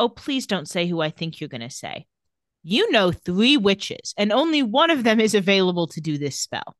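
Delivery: ordinary delivery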